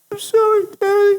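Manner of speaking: put-on very high, tiny little girl voice. Retelling what the answering machine recorded: little girl voice. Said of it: "this little girl voice going".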